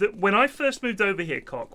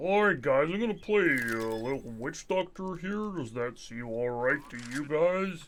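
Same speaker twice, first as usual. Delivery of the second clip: mock American accent, lower pitch; 4 semitones lower, 5 dB quieter than usual. Making fun of how someone talks, imitating an American accent. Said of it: "that's how Americans would say it".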